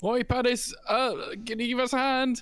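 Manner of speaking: calling out loudly. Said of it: "I'm shouting out to Panis".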